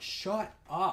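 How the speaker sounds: mock forceful, aggressive, cutting delivery. Retelling a reply to someone who kept talking: imitating saying it aggressively. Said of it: "I said it aggressively".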